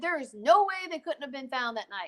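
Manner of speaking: plain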